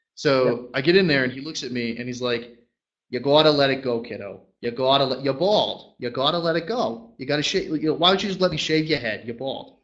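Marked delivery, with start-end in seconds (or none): 3.1-9.7 put-on old-school Boston local accent. Retelling how Larry pushed him to shave his head: imitating Larry's Boston accent. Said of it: "classic Boston towny accent".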